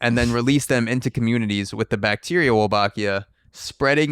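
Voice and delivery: ordinary talk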